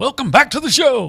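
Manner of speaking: put-on radio announcer voice. Asked to try a radio voice on the spot: radio announcer voice. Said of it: "I need to try a radio voice".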